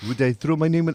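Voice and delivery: terrible, bad, put-on French accent. Describing a coach's reaction, the speaker quotes him in a bad French accent. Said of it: "I apologize to every French person who I'm about to offend".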